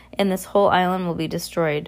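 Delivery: ordinary delivery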